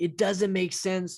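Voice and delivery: mock scream, toned down. Retelling screaming out loud to a voice in the shower: imitating own past screaming. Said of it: "screaming out loud to this, like, voice".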